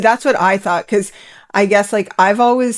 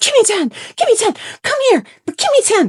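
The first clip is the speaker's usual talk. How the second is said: very high, frantic, swooping, stomping freak-out; 13 semitones higher than usual. Retelling how Melanie stomped around the place: imitating Melanie freaking out. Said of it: "stomping around all over the place, just being like".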